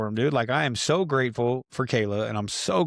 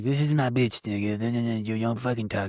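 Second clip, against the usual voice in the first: mock intoxicated, messy drunken rambling. Retelling how a brother talked when messed up: imitating someone talking wasted. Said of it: "This is how he talks when he's all fucked up".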